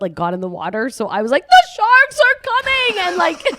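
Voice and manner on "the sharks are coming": frantic, shrill scream, very high and very loud. Retelling her panic at a nosebleed in the water: retelling a scream. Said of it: "I'm screaming".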